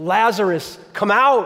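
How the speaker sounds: firm, authoritative, commanding tone, acted out. Speaker retelling Jesus calling Lazarus out of the grave: Jesus's retold loud command. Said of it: "he speaks in that loud, commanding voice".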